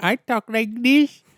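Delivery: very high, unhurried, put-on Indian accent. Showing how a speech disorder changes the voice: Indian accent. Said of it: "like, an Indian accent".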